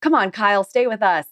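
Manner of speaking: mock joking, teasing tone. Retelling friends' joking plea to stay out: imitating friends joking. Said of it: "And kinda joking".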